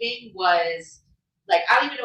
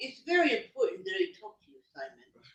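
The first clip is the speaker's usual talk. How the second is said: soft w for r in very, important; 3 semitones lower, 10 dB quieter than usual. Showing the others how she talks: Barbara Walters impression. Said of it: "That's what she does".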